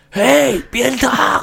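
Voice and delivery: put-on, very high, creaky elderly man's voice. Imitating a senior colleague being described: imitating an old man's voice. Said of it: "模仿老人的声音".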